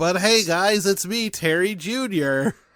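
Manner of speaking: high, loud voice pushed through the nose. Introducing a new character, the speaker greets the guys in nasal Terry Jr. voice. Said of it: "basically his voice, but nasalier".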